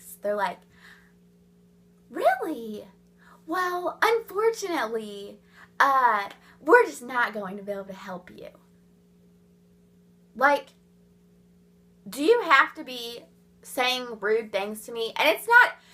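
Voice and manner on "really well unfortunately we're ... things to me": mock, overdone, saccharine, sugary-sweet fake politeness. Imitating women who talk like they're being super nice: fake super-nice voice. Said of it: "they talk to you in this voice like they're being super nice".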